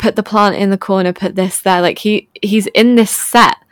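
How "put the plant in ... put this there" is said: ordinary talk, nothing marked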